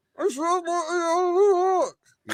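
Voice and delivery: very high, very slow, muffled voice. Retelling a bit where someone talks as if still in the box: imitating a muffled voice from a box. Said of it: "you still muffled".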